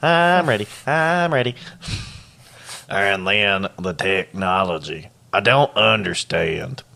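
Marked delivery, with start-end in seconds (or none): 0.0-1.6 high, pitched-up put-on cartoon character voice. Quoting a man who says he's ready, the speaker does a SpongeBob voice. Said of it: "like SpongeBob".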